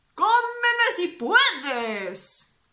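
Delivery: ferocious, very loud, very high shout. The grandfather toad faces a snake that threatens to eat them, shouted fiercely. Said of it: "Gritó ferozmente el abuelo".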